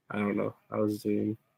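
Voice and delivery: ordinary delivery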